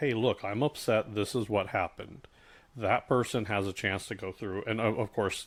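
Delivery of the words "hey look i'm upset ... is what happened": ordinary talk, nothing marked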